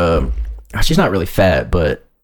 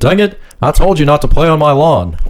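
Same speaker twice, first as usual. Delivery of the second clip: put-on Texan man's voice; 7 semitones higher, 4 dB louder than usual. Describing how someone talks when he gets mad, doing a Hank Hill voice. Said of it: "he kind of lives in that Hank Hill, like, voice".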